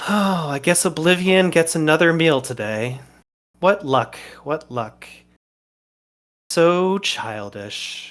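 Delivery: amused, light chuckle running through the words. Voicing a villain facing a player's character: chuckling lightly while speaking. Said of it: "chuckle lightly to himself and say".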